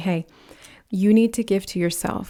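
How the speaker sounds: usual speaking voice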